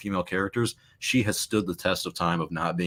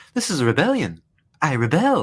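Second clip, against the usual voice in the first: overdone put-on British accent, high, loud, swooping; 8 semitones higher, 7 dB louder than usual. Mocking a disliked actress's line from the movie: mocking British accent. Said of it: "just admit you hate British accents".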